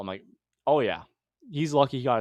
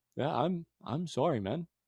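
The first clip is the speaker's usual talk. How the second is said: put-on calm, mellow tone, much quieter; 3 semitones higher, 6 dB quieter than usual. Retelling how an angry man suddenly calmed down, imitating a mellowed apology. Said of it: "he just mellowed the fuck out".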